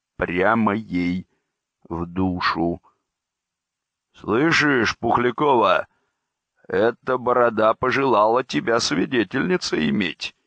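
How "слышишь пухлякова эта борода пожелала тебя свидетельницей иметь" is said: jeering, ribbing, mocking, teasing delivery. Reading a story, Timofey Ilyich speaks to Pukhlyakova; mocking. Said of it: "насмешливо сказал Тимофей Ильич".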